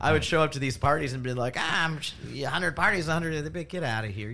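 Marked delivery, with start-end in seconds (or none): 1.6-3.4 high, put-on, played-up Mexican accent. Retelling how you would show up to parties, say this in a Mexican accent. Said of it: "Why did you sound like a small Mexican".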